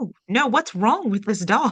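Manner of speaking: mock frightened, alarmed, high outburst. Retelling a scene from Friends about a scary book: imitating someone scared. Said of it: "she's so scared".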